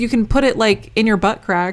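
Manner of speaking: normal talking voice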